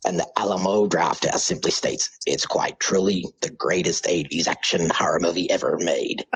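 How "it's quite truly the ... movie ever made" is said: deep, low, whispered American movie-trailer voice. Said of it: "American Deep Trailer Voice".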